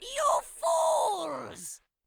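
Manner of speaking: very high, wicked, evil villain voice. Showing how the character sounds after turning evil: evil Sal voice. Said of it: "he becomes evil! So then, he sounds like this".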